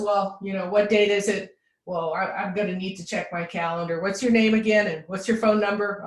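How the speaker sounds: ordinary delivery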